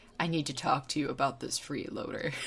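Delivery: very deep, very quiet, hushed rumbling dragon voice. Chatting about game minions, speaker voices the tiny Midgard Stormer, very deep Midgard Stormer voice. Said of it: "his very deep voice is like".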